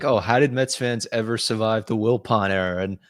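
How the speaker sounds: put-on sarcastic tone. Quoting one's own tweet to another speaker: retelling a sarcastic line. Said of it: "it's just sarcastically like".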